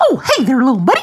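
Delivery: very high, loud cartoon voice. During a game, a player is told to do the voice: Mickey Mouse voice. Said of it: "Do the voice".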